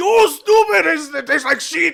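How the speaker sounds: very high, very loud, shrill, booming yell. Mocking head chefs on cooking shows: imitating a yelling head chef. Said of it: "the head chef yelling".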